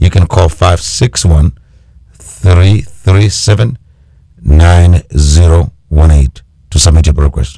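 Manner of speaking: slow, deliberate delivery. Repeating a phone number for listeners, saying it slowly. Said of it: "Let me say it slowly".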